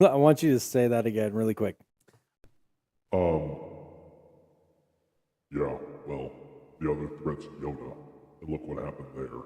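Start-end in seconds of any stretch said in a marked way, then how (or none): 3.1-9.3 very low, deep, salty grumble. Asked to say the line again, mock-salty Darth Vader voice. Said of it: "what it sounded like for Vader to be salty".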